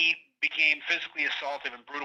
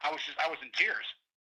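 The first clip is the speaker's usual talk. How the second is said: normal talking voice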